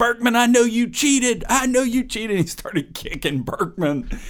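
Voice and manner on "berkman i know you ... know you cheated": mock very high-pitched, shrill, loud screaming. Retelling a coach's accusation at an exhausted runner: imitating someone screaming. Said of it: "just starts screaming at him".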